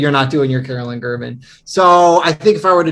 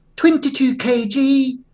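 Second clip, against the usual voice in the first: put-on Scottish accent, much higher pitch; 10 semitones higher than usual. Describing Carolyn to the others, imitating Carolyn's Scottish accent. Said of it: "the way you're doing her voice makes her sound like Mrs. Doubtfire".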